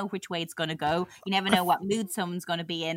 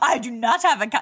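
mock upset, shocked, acted-out tone; 4 semitones higher, 3 dB louder than usual. Replaying to the other speaker how he reacted, mock-upset shocked denial. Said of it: "why, [name], are you so upset".

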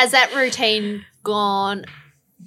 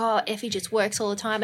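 ordinary talk, nothing marked

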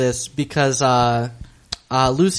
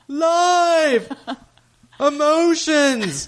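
high, ecstatic shouts. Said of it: "shouting random words".

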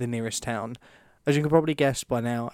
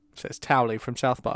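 usual speaking voice

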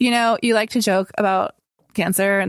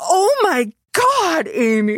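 acted, very slow, swooping, stunned laughing exclamation; 10 semitones higher than usual. Retelling how a woman and her husband reacted, imitating a shocked laugh. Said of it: "it was like a really shocked laugh".

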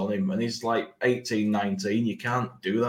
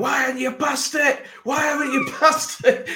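play-acted, very high, shrill, piercing shriek; 6 dB louder than usual. Confessing to screaming when a player didn't pass, retelling own screaming. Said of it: "I started screaming".

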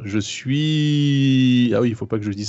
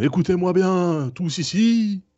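solemn, booming stentorian voice, pitched up; 8 semitones higher than usual. A character bursts through the palace doors to address everyone, booming stentorian voice. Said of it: "je prends une voix de Stentor et je dis".

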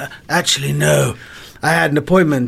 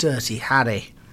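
ordinary talk, nothing marked

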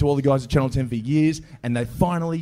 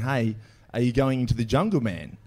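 ordinary talk

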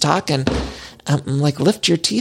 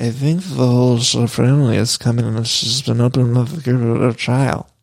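put-on slurring voice; 3 semitones lower than usual. Retelling how Meredith Marks said something: Meredith Marks impression. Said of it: "the way she said it".

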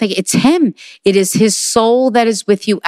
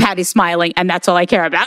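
ordinary delivery

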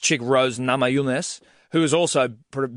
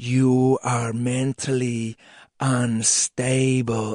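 whispering voice. Retelling a champion's face-off taunt to a challenger: imitating someone whispering. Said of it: "just whispering it in her face".

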